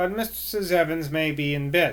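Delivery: ordinary delivery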